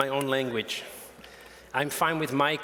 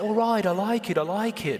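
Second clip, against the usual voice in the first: put-on higher voice with Liverpool accent; 6 semitones higher than usual. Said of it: "That was my Liverpool accent".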